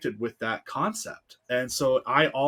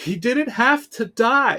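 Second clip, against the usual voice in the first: put-on very high, loud, tearful sobbing; 10 semitones higher, 7 dB louder than usual. Retelling answering their mom through tears, imitating own past sobbing. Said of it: "And I just was sobbing".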